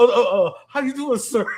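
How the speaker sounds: nervous, caught-off-guard, stammering, stuttering voice. Retelling Tyler meeting her dad, imitating Tyler stuttering. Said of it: "he started stuttering".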